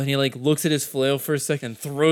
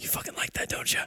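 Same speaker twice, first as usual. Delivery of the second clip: very quiet, breathy whisper. Narrator voices a swordswoman mid-fight taunting a player, whisper. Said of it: "you hear her whisper".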